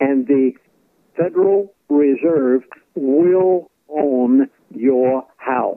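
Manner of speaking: speaking slowly. Speaker explaining the Federal Reserve to listeners, speaking slowly. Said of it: "I'm saying this slow".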